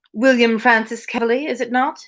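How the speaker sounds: attempted mid-Atlantic accent, high pitch. Reading a story aloud, the narrator voices a character in a mid-atlantic accent. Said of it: "I'm trying for a mid-Atlantic accent".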